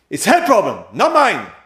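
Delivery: acted high shout. Retelling what a husband told the speaker: imitating a man shouting. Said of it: "how he shouts".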